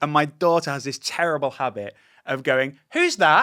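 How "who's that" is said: loud, carrying, tactless, high-pitched blurt. Retelling how a daughter asks about a stranger: imitating someone asking loudly. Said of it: "really loudly".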